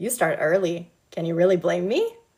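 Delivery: ordinary delivery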